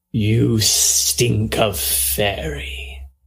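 voice slick like oil. A game master voices a voice heard in Eliana's mind, in a slick oily voice. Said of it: "a voice in your mind that feels slick like oil".

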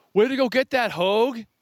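loud, very high yell. Recounting a throw that tailed out of bounds, the speaker retells the kid's yell. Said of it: "and he yelled at me".

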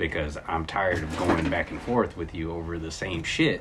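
ordinary talk

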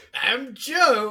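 loud, high, goofy host-style voice. Two friends do a mock YouTube intro, goofy YouTuber voice. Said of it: "That's my goofy YouTube guy".

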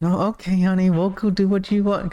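very high, meek, timid, spineless voice. Imagining a small person without confidence: imitating a timid man. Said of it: "without the confidence and stuff like that".

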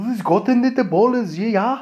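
poor put-on German accent. Imitating the Bundesliga commentary on in the background, in a shit German accent. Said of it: "That wasn't any better".

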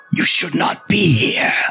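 rasping tone. Storyteller voices a single voice calling out to the players, raspy voice. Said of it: "you just hear a single voice call out in a raspy, raspy tone".

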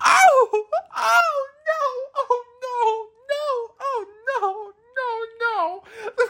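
very high sobbing wail, stretched-out no's. Retelling a movie scene where Lena comes up from the water: imitating a screaming, crying character. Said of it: "Lena comes up screaming and cry-".

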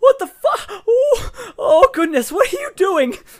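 panicked, shrill, terrified screaming, very high and loud. A startled character collapses on his back, holding his chest: terrified scream. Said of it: "There is an immediate scream".

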